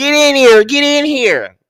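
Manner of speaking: very high, shrill, very loud call. Welcoming viewers into the live chat: imitating Armand Wiggins. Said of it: "channel my inner, um, Armand".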